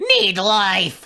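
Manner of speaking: strange, weird, high talking-book voice. Storyteller in a tabletop game voicing a book that tries to eat a hand, weird voice. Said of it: "It says in a weird uh, voice".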